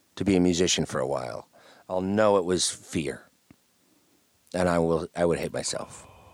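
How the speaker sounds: usual speaking voice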